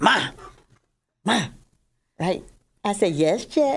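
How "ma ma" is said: firm, commanding, acted call with full authority. Describing how she calls her grandmother, imitating an authoritative 'ma'. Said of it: "She says it with authority".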